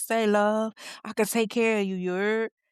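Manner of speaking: put-on Louisiana accent, laid on heavy. Retelling how a man flirts with a woman he meets: imitating a Louisiana accent. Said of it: "that accent be thick".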